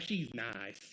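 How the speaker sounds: put-on Southern accent, slipped in suddenly. Quoting Midwest-nice talk about her, in a put-on Southern accent. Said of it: "I don't know why I'm giving this a Southern accent all of a sudden".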